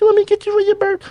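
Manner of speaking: shrill, loud, very high-pitched voice. Quoting a question his old lady asks: mimicking his old lady's voice. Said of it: "that mimicking voice of her".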